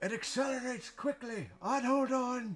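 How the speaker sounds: shrill, very high yell from far above. Voicing a pilot calling down from the cockpit: NPC yelling down. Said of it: "you hear him yell down".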